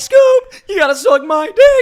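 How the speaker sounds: very high, very loud, stretched-out voice. Doing a requested impression in a Scooby bit: Shaggy impression. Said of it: "okay on the impressions?".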